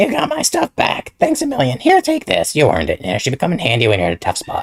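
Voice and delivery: shrill, loud, bad voice with swinging pitch. Playing the game, the speaker voices a character's lines in a bad Toad voice. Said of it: "That is not a good Toad voice".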